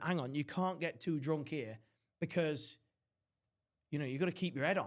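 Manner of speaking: usual speaking voice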